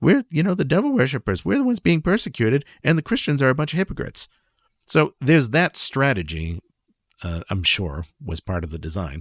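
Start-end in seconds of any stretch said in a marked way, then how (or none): 0.0-4.3 self-satisfied, smug, higher-pitched delivery. Imagining what the group says after Christians attack: imitating a smug speaker. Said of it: "after which you smugly say".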